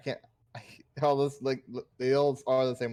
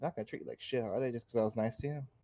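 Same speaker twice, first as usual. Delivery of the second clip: quiet, hushed, confidential half-whisper; 8 dB quieter than usual. Half-whispering in character to a bugbear named Teddy: half-whispering. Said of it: "I'm kinda whispering to him".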